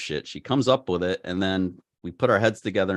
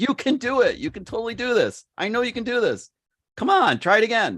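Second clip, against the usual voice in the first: very high, loud coach-style yell. Retelling urging someone to fly a drone: imitating own past yelling. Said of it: "I yelled at her a lot".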